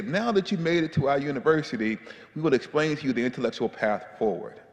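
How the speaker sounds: ordinary talk, nothing marked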